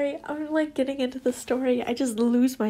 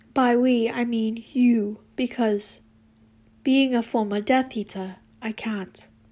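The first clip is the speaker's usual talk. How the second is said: plain reading voice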